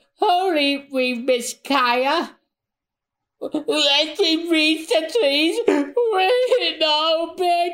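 very high, weepy, tearful crying voice. Voicing one of the boys running, a character who is an onion, crying voice. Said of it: "You gave him a crying voice".

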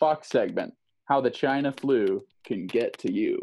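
ordinary delivery

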